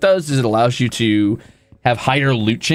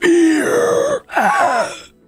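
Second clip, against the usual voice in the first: video-game character cry, pitched very high. Showing chat the voice of the League of Legends character: Fiddlesticks voice. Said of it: "the character that's always like".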